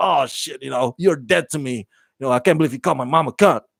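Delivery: acted-out, tough-guy, hard-man bravado and bluster. Retelling how someone threatened his girlfriend: imitating someone acting tough. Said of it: "acting all tough".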